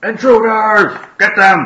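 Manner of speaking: very high, loud, alarmed orc yell. Game master voicing camp orcs spotting the party: orcs shouting at intruders. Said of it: "they do start to shout like".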